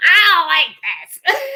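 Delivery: mock yelling voice. Retelling how she yelled when picked up: imitating someone yelling. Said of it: "she yelled".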